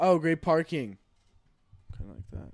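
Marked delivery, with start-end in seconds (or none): 0.0-1.0 mock sarcastic, passive-aggressive tone. Retelling what neighbours said about parking: imitating passive-aggressive remark. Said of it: "passive aggressive".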